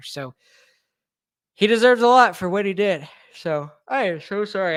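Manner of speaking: speaking through yawns. Wrapping up the evening's show for listeners, yawning. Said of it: "I'm yawning so much".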